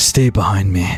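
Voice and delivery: low stage whisper. In a second-person story, a defender steps in front of you and says: half-whisper. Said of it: "he whispers to you".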